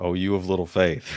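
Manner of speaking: ordinary delivery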